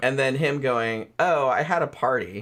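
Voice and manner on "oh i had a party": mock deadpan delivery, imitated. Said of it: "so deadpan".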